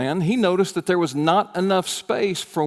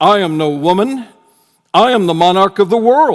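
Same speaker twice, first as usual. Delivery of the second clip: booming, commanding, stern, very loud voice; 3 semitones higher, 10 dB louder than usual. Retelling a story, voicing the monarch's reply: very deep, stern voice. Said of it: "the line replied in a very deep, stern voice".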